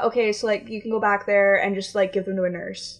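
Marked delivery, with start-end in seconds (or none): none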